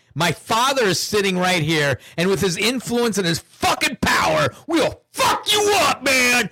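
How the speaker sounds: very high, climbing scream. Retelling a threatening text message, imitating Hunter Biden screaming. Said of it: "You know he was screaming".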